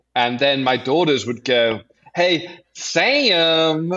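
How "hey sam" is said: broad Southern drawl with one word stretched long. Imitating daughters calling a brother's name: imitating a strong Southern accent. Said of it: "strong Southern accent".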